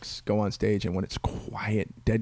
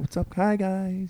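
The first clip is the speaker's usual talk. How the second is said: put-on mellow, low-energy voice; 10 semitones higher than usual. Retelling a comic walking on stage after a high-energy act: imitating Joe, mellow and low energy. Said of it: "He's real mellow".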